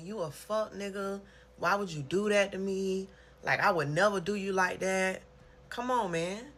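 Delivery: heated, stressed, confrontational tone. Retelling having it out with a best friend: retelling a heated argument. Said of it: "I'm stressing".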